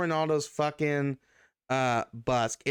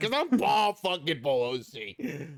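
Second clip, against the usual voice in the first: put-on arrogant rich man voice; 2 semitones higher than usual. Acting out an arrest, answering the officer: imitating Paul Pelosi's voice. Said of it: "Why do you sound like this?".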